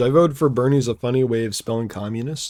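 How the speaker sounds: ordinary talk, nothing marked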